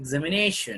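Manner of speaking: "examination" with stress on the na syllable. Lecture on word stress, saying examination with main stress on na. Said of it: "Nation has to be highlighted with the vibration of vocal cords ... It has to be pronounced with stress. Examination, like that we have to pronounce".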